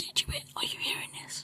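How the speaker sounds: hushed, breathy whisper. Recounting a question the speaker put to a companion, retelling a whisper. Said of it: "So I like kind of whisper".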